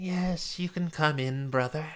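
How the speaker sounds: put-on soft, elderly-sounding voice. The narrator voices someone behind a curtain answering a request to enter, old voice. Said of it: "you hear this kind of old voice say".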